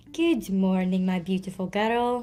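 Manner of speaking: put-on Scottish accent, slowed. Quoting what he says to her in voice notes, imitating Boo Boo's Scottish accent. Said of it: "Can you guys do the Scottish accent?".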